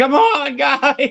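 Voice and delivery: very high, shrieking scream. Narrating a game scene, Nate calls the group to the car, screaming. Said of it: "Nate screams".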